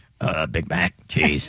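froggy, croaky voice. Ordering at a pretend McDonald's as the Frogman: Frogman's Froggy voice. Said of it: "Frogman's in the drive-thru".

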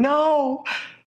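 mild, high-pitched scream. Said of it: "and someone screaming".

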